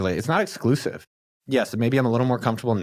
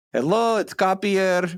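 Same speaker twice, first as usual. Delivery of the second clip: put-on Israeli-accented voice; 9 semitones higher than usual. Talking about your dad's part in the audiobook recording, speak while imitating dad's Israeli accent. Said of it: "about my dad's accent".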